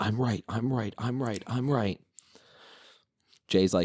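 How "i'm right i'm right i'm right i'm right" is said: put-on screaming rant, repeated over and over. Retelling a wrestling segment where one man starts screaming: imitating someone screaming. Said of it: "just starts screaming".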